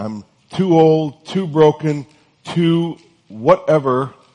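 put-on loud Californian accent with words dragged out. Speaker voicing what many people say on hearing of god's plan, in a californian accent. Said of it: "I sounded like a Californian".

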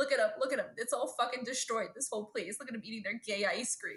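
ordinary delivery

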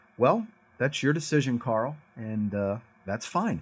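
play-acted detached, uninvolved, emotionless tone. Retelling Mom's reply to moving in with Dad: imitating mom's emotionless tone.

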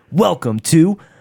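loud sportscaster announcer voice. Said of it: "wrong pause".

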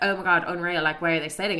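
ordinary talk

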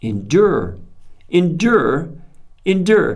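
repetition of endure, building in intensity.

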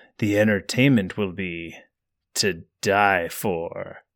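deep, foreboding voice. Narrator reading a game's intro as the host greets guests, deep, ominous voice. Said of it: "the host says in a deep, ominous voice".

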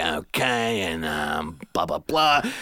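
low, raspy male voice with a New York accent. Describing the voices they do, demonstrating a raspy New York voice. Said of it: "we kind of do this like raspy, like New York voice kind of guy".

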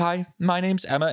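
thickly muffled, slow, high-pitched voice. Retelling meeting a masked woman while checking out, imitating Emma's muffled voice. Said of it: "So it's all muffled".

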